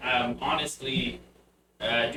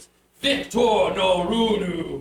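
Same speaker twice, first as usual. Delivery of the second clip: very big, booming, thundering voice; 5 semitones higher, 6 dB louder than usual. Narrator voicing a character heard before a door opens: very booming voice. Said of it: "you hear him in a very booming voice".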